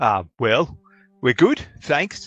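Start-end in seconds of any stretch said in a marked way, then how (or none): 1.2-2.3 put-on raised, higher-pitched young farm lad voice. Voicing a young man who greets a player: voicing a young farmer. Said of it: "says Barry".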